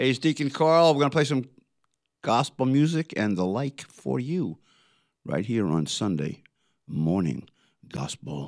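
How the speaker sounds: radio DJ announcer voice. Host opening a Sunday morning gospel show on the station, radio announcer voice. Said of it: "I thought that was a good radio voice".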